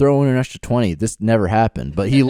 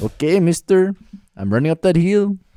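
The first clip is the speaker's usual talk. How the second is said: put-on Mexican Spanish accent on English, pitched up; 7 semitones higher than usual. Doing a Spanish-version bit, the speaker talks in a Mexican Spanish accent. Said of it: "I can do those accents".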